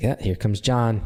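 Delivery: plain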